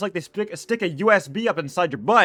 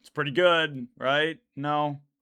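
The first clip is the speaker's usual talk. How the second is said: usual speaking voice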